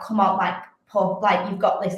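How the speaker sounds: ordinary talk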